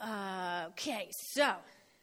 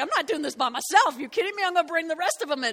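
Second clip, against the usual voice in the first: loud, higher indignant voice.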